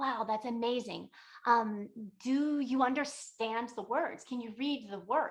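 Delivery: gushing, overly impressed, delighted admiration. Retelling a story where a woman asks the reader questions: imitating an impressed woman. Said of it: "so impressed that he can read".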